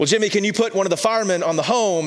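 high, loud, fast, frustrated pleading.

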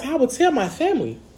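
honeyed, sweetened, sugary voice. Speaker urging listeners to share, switching to his sweet voice. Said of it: "I have to tell them in my sweet voice".

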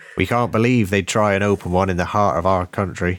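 put-on rustic country farmer accent. Reading quotes from Cornish people, the speaker uses a put-on farmer accent. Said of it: "I'll just do a farmer accent".

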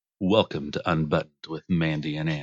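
deep, low show-intro announcer voice. Giving a preview of a new podcast's intro: low, deep voice. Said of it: "give him a preview, babe".

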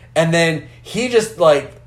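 ordinary talk

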